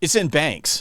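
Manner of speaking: put-on jaded, cynical, knowing tone. Retelling a colleague's cynical answer about where the money is: imitating a cynical reply. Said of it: "really cynically goes".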